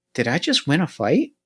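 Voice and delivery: muttering quietly under breath. Playing a character who looks back and finds the other gone: muttering under breath. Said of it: "I just mutter under my breath".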